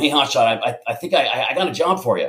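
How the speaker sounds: halting, stammering, faltering, repetitive way of talking. Retelling how the program director called out, imitating Tom Lee. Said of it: "That's how he talks".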